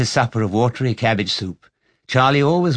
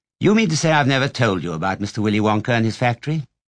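ordinary delivery

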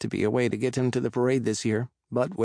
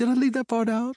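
very high, innocent little voice; 12 semitones higher than usual. An uncle telling the narrator some news, asking innocently. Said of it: "He asks innocently".

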